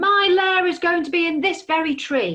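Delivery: booming dragon roar. The dragon refuses Hedgehog's offer to find another tree, roaring. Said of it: "Roared the dragon".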